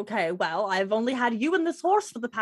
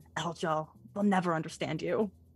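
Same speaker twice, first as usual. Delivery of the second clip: hushed whisper, lower, quieter; 5 semitones lower, 5 dB quieter than usual. Voicing a character whispering nonsense to the horse: whispering to a horse. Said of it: "whispering, like, nonsense to the horse".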